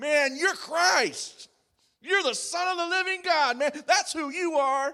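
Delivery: loud, high-pitched, blurted-out yell. Speaker acting out a man blurting out his answer, retelling a yell. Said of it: "he's just yelling it out".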